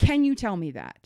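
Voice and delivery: firm and a bit irritated. Retelling a call to Walgreens about moving prescriptions, firm and a little ticked off. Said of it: "that was literally my tone. Firm, little ticked off".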